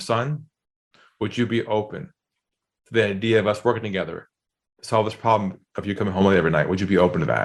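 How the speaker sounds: voice dropped down on purpose. A father retelling what he said to his son at the door, in a deliberately lowered voice. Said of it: "I lowered my voice like he talked to me".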